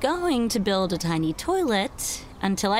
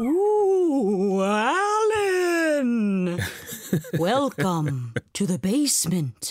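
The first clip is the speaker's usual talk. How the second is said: spooky, haunting ghost voice, name drawn out. Speaker pretends to be the listener's grandfather haunting the studio, haunting grandfather ghost voice. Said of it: "I'm pretending to be your grandfather".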